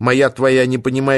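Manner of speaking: plain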